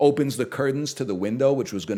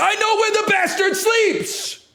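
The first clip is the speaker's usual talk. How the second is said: very high-pitched, put-on English accent; 4 dB louder than usual. Quoting the line from Bram Stoker's Dracula: Keanu Reeves English accent. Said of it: "the perfection of an English accent".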